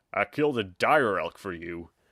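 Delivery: rough, gruff delivery. Narrator reads the cook's line as he greets Orin, gruff voice. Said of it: "the gruff voice said".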